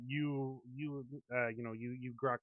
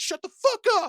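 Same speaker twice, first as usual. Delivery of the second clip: sudden, very loud, high-pitched furious yell; 16 dB louder than usual. Voicing a character who suddenly loses his cool: angry outburst, losing his cool. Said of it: "suddenly Finn loses his fucking cool".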